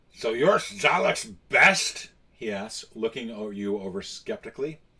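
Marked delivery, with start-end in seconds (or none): 0.2-2.1 loud, slow, booming, skeptical orc voice. Narrating the game as the player enters, the speaker voices General Grick: Grick the orc voice. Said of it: "I'm going to do the voice for the orc".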